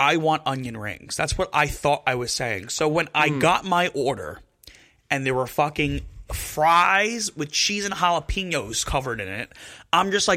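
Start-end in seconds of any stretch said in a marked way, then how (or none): none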